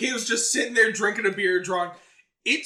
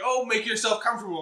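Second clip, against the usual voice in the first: put-on, openly sarcastic delivery; 2 semitones higher than usual. Retelling a line from a scene, imitating a sarcastic remark.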